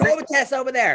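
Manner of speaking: light, mild woman's yell. Retelling how a lady at the ship yelled orders: imitating a lady yelling. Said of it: "this lady starts yelling at me".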